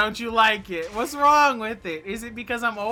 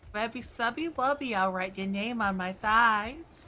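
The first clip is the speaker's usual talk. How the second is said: put-on, fake cutesy "ooh woo" voice; 6 dB quieter than usual. Putting on a cute voice for chat: put-on cute ooh woo voice. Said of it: "You don't like my ooh woo voice?".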